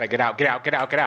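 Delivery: urgent, insistent, repeated delivery. Playing a game with others, a player yells at a teammate, yelling. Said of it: "I didn't mean to yell at you".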